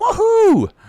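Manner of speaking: excited, very high, loud whooping cheer.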